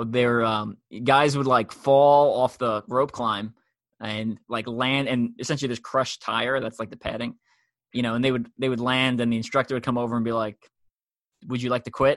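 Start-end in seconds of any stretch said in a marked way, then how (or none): 11.5-12.2 stoic, deadpan delivery. Retelling an instructor asking a fallen climber: imitating a stoic instructor. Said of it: "completely stoic".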